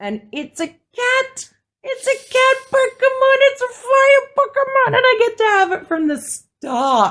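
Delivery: high, loud, thrilled, gushing squeal of delight.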